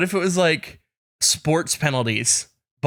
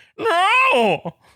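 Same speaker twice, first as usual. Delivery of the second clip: squeaky, very high voice, as if through a mask; 4 dB louder than usual. Showing how a reply came out while on the CPAP, as if talking through a CPAP mask. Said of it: "it sounded like, no! Like, this is how it came out".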